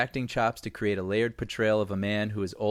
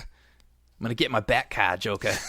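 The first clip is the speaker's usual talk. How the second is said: put-on Boston accent. Discussing the new Batman casting, mimicking the expected voice: Batman with Boston accent. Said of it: "everyone's expecting like the Boston accent".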